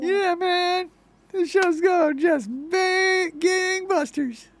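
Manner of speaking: very high, loud cartoon-character voice. Chatting about how the show is going, in a Rick and Morty character voice. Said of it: "Why do you sound like that one character from Rick and Morty?".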